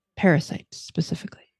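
secretive whisper. A game master's character tells travelers about a parasite, lowered voice. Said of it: "she'll kind of lower her voice a little bit".

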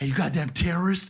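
forceful stage whisper. Retelling what a man rocking his baby said to him, in a loud whisper. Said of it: "he said it like he did a loud whisper".

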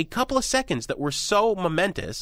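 scornful, ironic, overstated sarcastic tone. Discussing the overreaction to a few seconds of broadcast, sarcastic. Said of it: "I say that sarcastically".

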